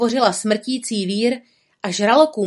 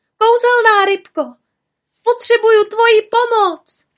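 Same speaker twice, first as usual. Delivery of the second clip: shrill, very high, loud calling out; 12 semitones higher, 7 dB louder than usual. Caught in a whirlpool, Merlia calls to the magic fish, calling out. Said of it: "Otevřela pusu a zvolala".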